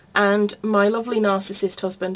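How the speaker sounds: plain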